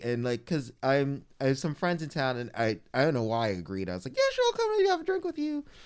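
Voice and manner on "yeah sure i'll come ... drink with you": very high, quick, squeaky voice. Retelling agreeing to a drink, the speaker quotes themself in a Mickey Mouse voice. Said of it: "That was my Mickey Mouse voice".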